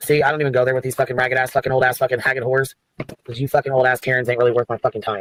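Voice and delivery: very upset, angry, heated venting rant. Ranting to the others in the conversation, very upset. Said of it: "You sound very upset again".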